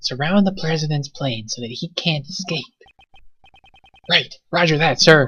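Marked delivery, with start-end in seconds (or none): 0.0-2.6 whispering in a put-on character voice. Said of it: "I think he's whispering this".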